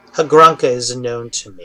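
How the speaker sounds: loud, booming voice rolling like thunder. Voicing Hades greeting the players: voice like thunder. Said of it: "he says in a voice that sounds like thunder".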